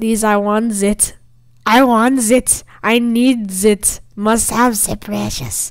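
creepy, grasping creature voice, full of craving. A gamer begging to join a faction, doing a Gollum impression. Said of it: "That was such a stupid golem impersonation".

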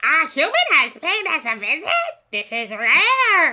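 high, loud, put-on bird voice, rare stretched. Voicing a bird creature greeting a human visitor in a role-play: bird creature voice. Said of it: "What's a good bird voice?".

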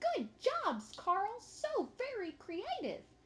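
very high, little squeaky voice. Mrs. Hyatt claps her hands for Carl, in Mrs. Hyatt's little squeaky voice. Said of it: "say in her little squeaky voice".

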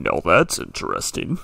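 ultra-macho, deep, loud, keenly interested voice. Retelling what your game character said on picking up a mushroom, put-on manliest, interested voice. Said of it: "in the most manliest, interested voice".

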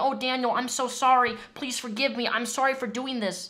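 mock on-your-knees pleading, begging voice. Retelling how an ex would beg for forgiveness: imitating someone begging. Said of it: "get on the ground and beg me".

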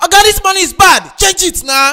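shouting. In a skit arguing over a banknote, one character demands it be changed, shouting. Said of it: "Why are you shouting at me now?".

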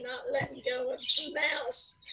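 ordinary delivery

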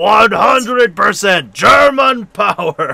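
clumsy, slow, loud, high mock announcer shout.

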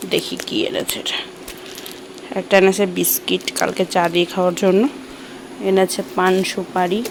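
quiet, low, hushed voice. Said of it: "আস্তে আস্তে কথা বলছি কারণ হচ্ছে মেয়ে ঘুমোচ্ছে".

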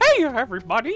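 high, loud, squeaky voice. Talking about Kingdom Hearts with someone: Mickey Mouse voice. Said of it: "Oh, Mickey Mouse".

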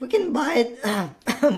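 cracking voice, breaking on the words. Playing a game together, the other player answers with a voice crack. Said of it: "Voice crack".

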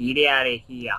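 put-on Brooklyn accent. Streamer reacting to chat, Brooklyn accent. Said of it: "I do my Brooklyn accent".

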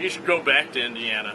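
usual speaking voice

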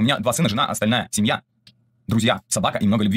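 normal talking voice

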